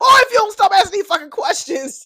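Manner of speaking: shrill, very high, very loud full-force screaming. Retelling how Vanessa got up and screamed at him: retelling Vanessa's scream. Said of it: "just screamed at him like".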